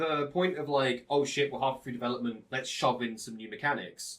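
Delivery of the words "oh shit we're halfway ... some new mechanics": ordinary delivery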